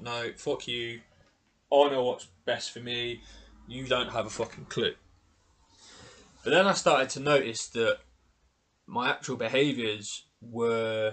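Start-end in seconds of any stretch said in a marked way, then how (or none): none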